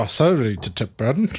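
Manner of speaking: put-on South African accent. Answering a co-host's question in a put-on south african accent. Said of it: "Why are you doing the South African one?".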